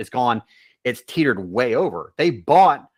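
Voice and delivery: loud, heated, outright shouting. Speaking into a microphone, apologizing for yelling mid-point: yelling. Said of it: "I'm yelling into the microphone".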